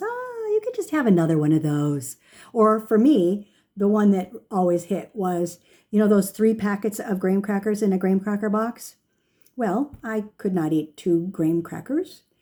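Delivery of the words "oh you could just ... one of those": sweetly tempting little voice. Talking about sugar cravings, voicing the little voice inside: sugar-craving inner voice. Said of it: "that sugar voice that goes".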